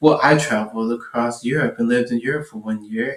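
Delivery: flat, put-on deadpan tone. Retelling what Katie said in reply to Josh, imitating Katie's deadpan.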